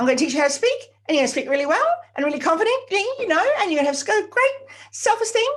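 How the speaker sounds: hurried, pitched way up, loud, no breaths. Showing how speech sounds without proper breathing: rushed, no deep breaths. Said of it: "Quickly, quickly, quickly, no deep breaths".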